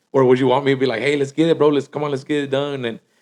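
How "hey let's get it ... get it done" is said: mock enthusiastic pep, quieter. Contrasting two versions of oneself: playing an energetic self. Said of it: "con ánimo".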